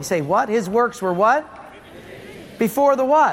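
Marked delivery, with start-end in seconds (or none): none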